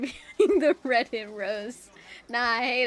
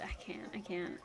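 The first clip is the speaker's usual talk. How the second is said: usual speaking voice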